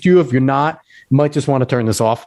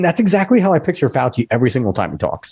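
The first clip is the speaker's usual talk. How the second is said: ordinary talk, nothing marked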